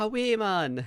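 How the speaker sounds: put-on Geordie accent, very high-pitched. Retelling how a coworker greets them: imitating a coworker's Geordie greeting. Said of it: "a guy at work who keeps coming past me going".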